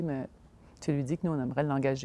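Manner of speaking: ordinary delivery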